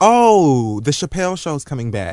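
ordinary talk, nothing marked

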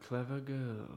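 slow, hushed delivery.

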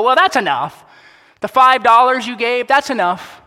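booming, approving voice, high, loud, distant-sounding. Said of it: "God is out there can see us and go".

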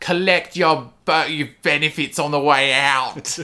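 loud, high-pitched, showy, projected rock-star voice. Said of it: "that was a perfect impression of [name]".

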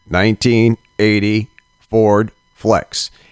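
little, flat, monotone robotic recorded-call voice. Acting out a car warranty spam call: little robotic voice. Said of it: "with a little robotic voice".

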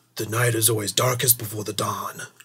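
dramatic, epic blockbuster-movie style delivery. Mid-conversation, the speaker drops a line in a Christopher Nolan movie voice. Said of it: "It's me talking in a Christopher Nolan movie".

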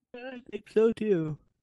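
talking through a yawn. Agreeing that the recording wraps up, yawning while talking. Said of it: "As you're yawning".

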